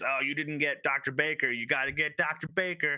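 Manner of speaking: play-acted irritated, angry, bossy scolding. Recounting a scene where she yells at the two guys; retelling a yell. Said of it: "she yells at the two guys".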